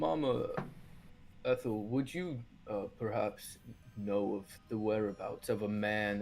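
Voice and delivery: voice dropped low. A player's character approaches mama ethel asking about a man, in a lowered voice. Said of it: "I just lower my voice".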